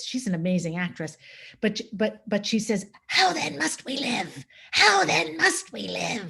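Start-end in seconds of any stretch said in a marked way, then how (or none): 3.1-6.3 raspy, high-pitched voice with swooping pitch. Quoting a line from the movie, imitating Linda Hunt's raspy voice. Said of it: "puts on this, um, really raspy voice".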